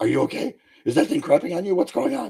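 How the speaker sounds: acted-out frantic panic, high, rushed, freaking out. Retelling how mom reacted when a crow landed on the shoulder: imitating mom freaking out. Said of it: "my mom is freaking out".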